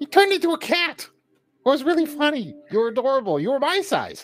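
very high, squeaky, tiny little fairy dragon voice. Voicing Glitterwing, a little fairy dragon, answering a question in the game, Glitterwing fairy dragon voice. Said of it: "there is a little fairy dragon".

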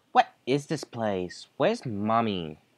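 put-on sing-song valley girl voice. In an acted scene, speaker voices a character with a typical valley girl voice. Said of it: "I'm getting the typical valley girl voice".

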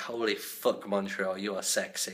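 ordinary talk, nothing marked

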